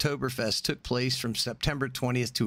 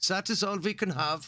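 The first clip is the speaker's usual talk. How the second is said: clumsy, bad put-on German accent, pitched up; 7 semitones higher than usual. Imitating Germans sticking to drinking rules, put-on German accent. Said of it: "can't do a German accent".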